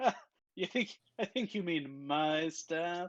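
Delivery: speech mixed with laughter. Voicing Nesnar, the drow with the spider staff, laughing while talking. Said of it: "he'll laugh and be like".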